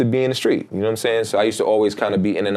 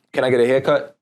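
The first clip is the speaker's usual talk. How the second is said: put-on demanding, pushy, attitude-heavy, mad tone; 2 semitones higher than usual. Retelling a customer walking into a barbershop: imitating a customer's mad attitude. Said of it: "he said it with mad attitude".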